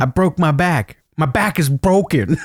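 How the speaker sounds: odd, slow, deliberate, drawn-out voice. Retelling a fighter's excuse after losing his last fight: imitating the fighter's voice. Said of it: "him having that voice".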